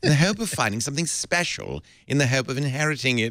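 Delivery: la-di-da posh upper-class British accent. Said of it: "a posh British accent".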